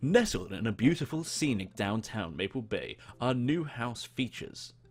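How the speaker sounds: corny, cheesy commercial announcer voice-over. Asked to sell someone on the new house, pitching it in a cheesy announcer voice. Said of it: "do my best cheesy announcer voice".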